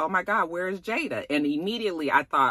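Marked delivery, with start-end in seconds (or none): 0.0-1.3 mock high, frantic, alarmed panic. Retelling searching for a missing child: imitating frantic panic.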